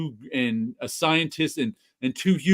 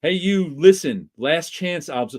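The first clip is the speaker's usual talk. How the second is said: ordinary talk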